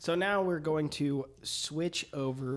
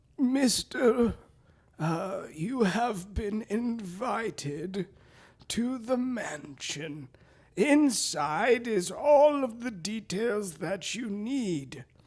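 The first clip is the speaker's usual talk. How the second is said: put-on high, slow, frail, withered old man voice; 7 semitones higher, 3 dB louder than usual. Narrator voicing a visitor who hands the listener an envelope, withered old man voice. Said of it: "just this like withered old man in like a suit".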